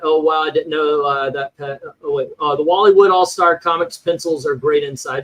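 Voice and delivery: plain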